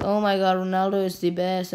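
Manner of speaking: ordinary delivery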